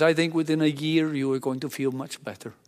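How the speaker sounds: put-on speaking with Indian accent. Retelling a doctor's answer on the second visit: indian accent. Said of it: "in his wonderful Indian accent".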